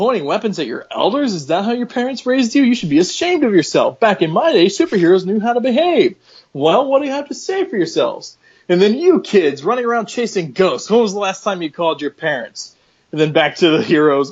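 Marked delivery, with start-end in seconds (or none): 0.0-12.8 stern, scolding, finger-wagging chiding tone. Retelling how ghosts chide two superheroes: imitating ghosts scolding. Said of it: "proceed to chide".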